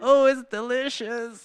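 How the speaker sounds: high, tearful voice, speaking through crying. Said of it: "But I was crying".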